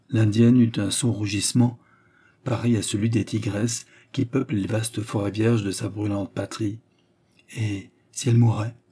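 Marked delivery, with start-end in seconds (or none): 7.5-8.7 shaking, unsteady, quavering voice. The Indian woman puts a question to the marquis, voice trembling. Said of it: "sa voix trembla plus fort encore".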